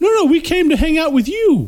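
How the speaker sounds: insistent, high-pitched voice.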